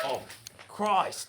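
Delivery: put-on breathy Australian accent. Reacting to a threat in a skit, Australian accent. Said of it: "now you sound Australian".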